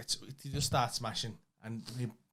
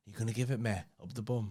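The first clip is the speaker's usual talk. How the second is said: put-on sexy voice with pauses. Recalling a woman's line from a favourite bit, imitating a sexy voice. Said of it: "dead sexy how she went".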